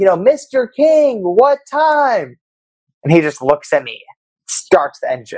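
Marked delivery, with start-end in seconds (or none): 0.2-2.4 mock very high, very slow, drawn-out shouting. Recounting calling to a man through his windshield, retelling own shouting. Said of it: "I'm now like shouting through the windshield".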